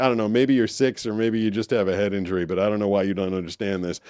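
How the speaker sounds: ordinary delivery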